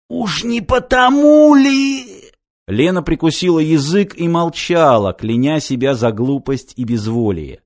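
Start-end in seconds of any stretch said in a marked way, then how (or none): 0.1-2.3 husky, delighted, very high, very slow, drawn out. A man presses a young woman with questions, slightly hoarse with delight. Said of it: "От восторга он даже немного осип".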